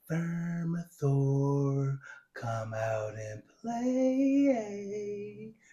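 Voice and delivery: meek, very timid, soft call, drawn-out ending. Retelling how she walks to the edge and calls Vermithor: imitating a timid voice. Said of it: "In a very timid boy, I mean voice".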